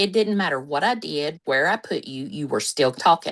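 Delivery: normal talking voice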